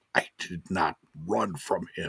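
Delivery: play-acted fury, voice quivering almost to shaking. Retelling Mustafa Ali's parking lot answer, imitating him furious and quivering. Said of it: "he's almost quivering. He's so mad".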